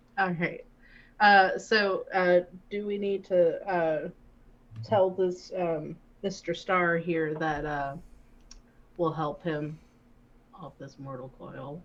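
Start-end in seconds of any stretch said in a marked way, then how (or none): 2.7-11.8 low, lowered-tone delivery. Asking the other players about the nearby sick man, in a lower tone. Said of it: "I said that in a, like, a lower tone".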